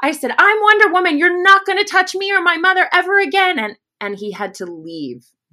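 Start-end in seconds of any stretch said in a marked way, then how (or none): 0.4-3.6 shrill, very high, loud, top-of-lungs scream. Retelling screaming at a man as a furious child: retelling a scream. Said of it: "I was screaming at the top of my lungs".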